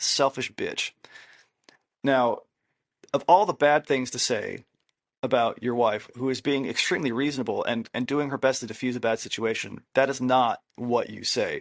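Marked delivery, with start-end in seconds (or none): 0.0-0.9 put-on muttering under breath. Retelling walking down the hall after an argument: imitating muttering under breath. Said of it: "I said underneath my breath".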